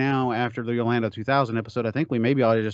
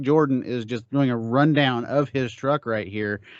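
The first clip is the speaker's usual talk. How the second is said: ordinary talk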